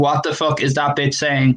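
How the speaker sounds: ordinary delivery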